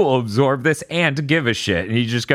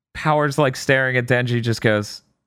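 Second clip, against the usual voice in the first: plain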